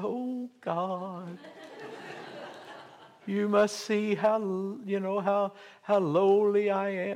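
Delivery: small, high, little pitiful voice. Showing the voice one puts on when praying to God, little pitiful voice. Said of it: "whether I put on my little pitiful voice".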